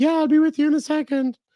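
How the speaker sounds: put-on woman voice, very high pitch. Recalling a voice calling from out of sight in a barbershop, imitating a woman's voice. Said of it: "That's my best woman voice".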